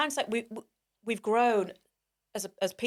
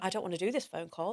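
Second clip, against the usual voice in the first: put-on crying, tearful pleading tone, quieter; 5 dB quieter than usual. Retelling how she begged him to avoid a phone call: retelling own crying plea. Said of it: "I'm literally crying to him saying".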